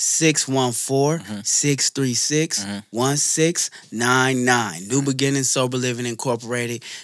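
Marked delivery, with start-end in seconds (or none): 0.0-4.9 slow, deliberate, unhurried delivery. Repeating the sober living company's phone number, said slower. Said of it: "I'm going to say it slower for you".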